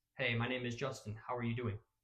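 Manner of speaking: stiff, awkward, wooden, rigid delivery. Showing a stiff, awkward way to greet someone: stiff, awkward greeting. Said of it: "standing there all stiff like this".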